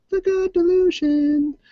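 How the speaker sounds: mocking, high-pitched put-on voice.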